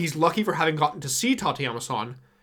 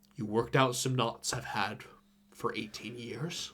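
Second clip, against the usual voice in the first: very quiet, low, hushed disguised voice; 5 semitones lower, 10 dB quieter than usual. A narrator reads a man's line as he finally speaks to her, in a low disguised voice. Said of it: "in a low voice to somewhat distort it".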